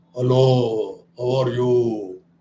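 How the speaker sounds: deep, low, slow pharyngeal male voice. Showing how the pharyngeal voice sounds: showing a male voice. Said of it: "This is the male voice".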